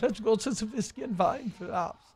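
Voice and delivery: put-on German accent. Friend joking that a phrase sounds german, saying it in a german accent. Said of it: "like I'm saying it with a German accent".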